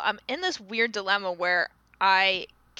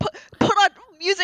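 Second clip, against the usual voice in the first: put-on high, dramatic childlike outcry; 12 semitones higher, 7 dB louder than usual. Retelling how the kids reacted to talk radio in the car: imitating dramatic kids' protest. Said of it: "we were all so dramatic".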